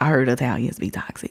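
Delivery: soft, unvoiced whisper.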